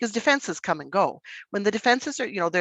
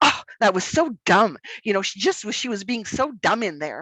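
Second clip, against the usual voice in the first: ordinary delivery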